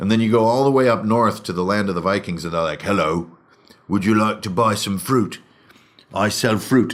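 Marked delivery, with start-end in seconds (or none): 2.8-6.9 put-on British accent with old-timey medieval lilt. Explaining game design, voicing Vikings offering fruit in a British accent with medieval intonation. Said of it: "a version of a British accent with uh, medieval intonation".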